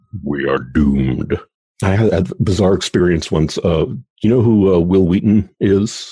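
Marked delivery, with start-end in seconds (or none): 0.2-1.3 ominous doom voice, lower and slower. An interviewer repeats the guest's prediction, in an ominous doom-saying voice. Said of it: "perfect voice to say doom".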